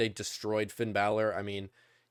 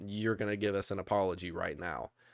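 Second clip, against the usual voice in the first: imitated stern, demanding tone; 2 semitones lower, 4 dB quieter than usual. Retelling a wrestler demanding an apology: stern, imitating Jimmy Uso.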